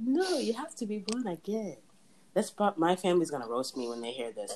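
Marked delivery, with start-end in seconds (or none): 0.0-1.8 bad put-on Nigerian accent. Quoting dad mid-story, in a horrible Igbo Nigerian accent. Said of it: "that's a horrible Igbo Nigerian accent".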